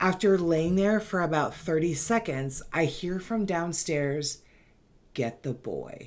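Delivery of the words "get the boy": very hoarse, soft, airy, wispy raspy voice. Retelling a voice heard from downstairs after waking up: raspy, wispy voice. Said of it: "in a very raspy, wispy voice".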